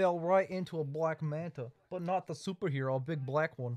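over-the-top put-on Australian accent. During a comedy bit with others, in an offensive fake Australian accent. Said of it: "our offensive Australian accents".

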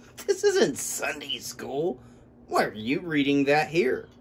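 scornful, sneering voice with swooping pitch. A school bully taunts two classmates reading at a table, sneering. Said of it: "he sneered".

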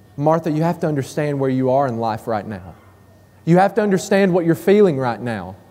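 put-on compassionate voice. Acting out a reply from the story, in a put-on compassionate tone. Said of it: "Can't you hear the compassion in his voice?".

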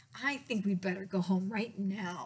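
plain reading voice

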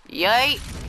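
triumphant, high, loud victory whoop.

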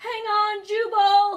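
worried distant calling. From a sailboat in the storm, someone calls to a stranded bullfrog, anxious, calling out. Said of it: "an anxious voice called out".

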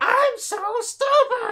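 very high, very loud cartoon toad voice. Asked to do just three words, the speaker says them in a toad voice. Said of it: "Gotta love a toad voice".

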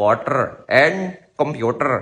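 put-on Indian accent, spoken slowly. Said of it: "They would say".

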